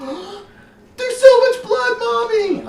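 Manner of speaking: put-on terrified little girl screaming, very high and loud.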